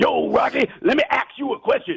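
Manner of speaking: put-on movie-style tough-guy voice. Retelling a scene from Rocky Three: Mr. T impression. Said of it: "when Mister T was like".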